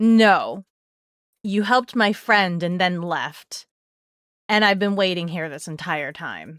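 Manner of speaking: short and blunt, unsoftened. Recounting a long wait, the speaker retells their reply to the worker who asked, curt and blunt. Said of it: "Just ever so curtly and bluntly".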